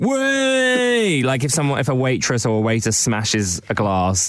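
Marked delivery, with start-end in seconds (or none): 0.0-1.2 mock laddish bloke voice, higher. Explaining what a lad does when someone drops something: imitating a pub lad. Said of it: "they'll be like".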